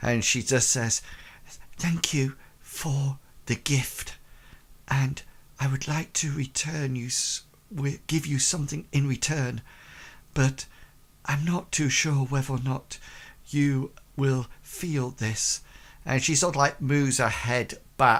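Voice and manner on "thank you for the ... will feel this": soft half-whisper, close to the ear. Voicing a character half-whispering into another character's ear: half-whispering. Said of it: "she whispers to your, uh, to you, Bartleby".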